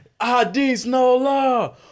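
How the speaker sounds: slow, high, loud hype call. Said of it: "Would you do it, please?".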